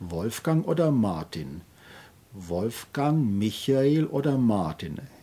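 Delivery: rising tune on Wolfgang, Michael, falling on Martin. Demonstrating how to stress alternatives in a question, rising on each name, falling on Martin. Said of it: "Es sind also immer aufsteigende Akzente und am Ende ein absteigender Akzent".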